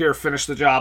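plain

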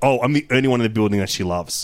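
ordinary talk

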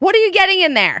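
very high, loud yelling. Retelling a late-night fridge raid at home: imitating mom yelling down the steps. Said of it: "yell down the steps".

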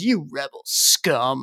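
acted scornful, contemptuous tone, low and quiet. Quoting the guy who points a blaster at them, mock disdainful. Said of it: "just with such disdain in his voice".

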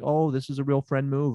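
ordinary talk

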